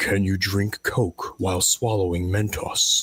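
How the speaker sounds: deep, dark, low voiceover-style voice. Describing a video's slow build of tension, then a deep dark voice. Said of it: "you just hear a deep dark voice say".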